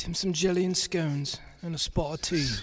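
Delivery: put-on British accent. Friends joking about how a phrase sounds, saying it in a put-on British accent. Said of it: "You gotta say it like you're British".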